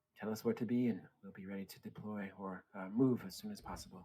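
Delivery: quiet, hushed voice. In a role-play scene, a character replies to an offer, speaking quietly. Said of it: "She says to you quietly".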